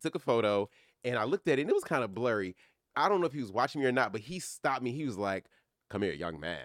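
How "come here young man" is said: deep, low, grand godlike voice. Retelling how the actor called him over: imitating Sidney Poitier's voice. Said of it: "you know that voice?".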